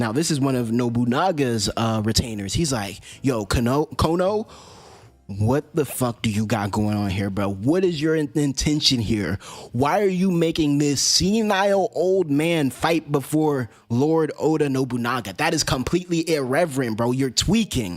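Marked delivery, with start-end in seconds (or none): 3.2-18.0 mock furious, angry scolding ranting outburst. Retelling an angry retainer scolding a lord: imitating someone furious. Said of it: "he's pissed as hell".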